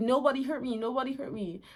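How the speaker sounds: wailing, pained voice of a hurt giant. Retelling the story, the blinded Cyclops cries out: imitating Polyphemus yelling. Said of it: "Why are you yelling then?".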